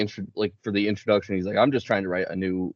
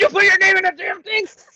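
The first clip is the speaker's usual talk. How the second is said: very high, loud, shrill, rushed scream; 9 dB louder than usual. Retelling how a film scene plays out: imitating someone screaming. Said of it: "rushes into the room and screams".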